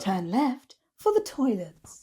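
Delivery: public-address announcer voiceover voice. Speaker claiming they'd make a good voiceover person, showing it: announcer voiceover voice. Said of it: "I could be a really good voiceover person".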